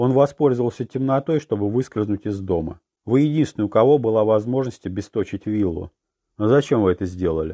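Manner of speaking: ordinary delivery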